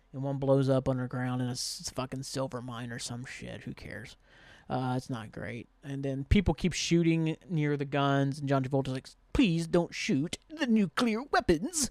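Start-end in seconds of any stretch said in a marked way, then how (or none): 9.3-11.9 pitched-up, movie-villain style voice. Retelling a movie scene where the villain pleads about weapons: John Travolta impression. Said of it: "that's my best Travolta".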